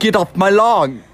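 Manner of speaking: high-pitched put-on Irish brogue. Trying to show how British people sound angry, the speaker lands on a put-on Irish accent. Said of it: "Wait, that's Irish".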